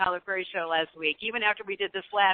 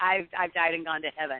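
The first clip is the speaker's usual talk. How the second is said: normal talking voice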